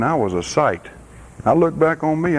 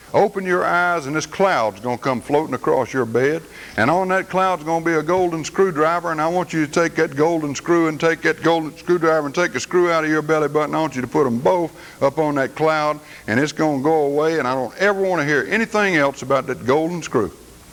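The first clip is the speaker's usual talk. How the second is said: normal talking voice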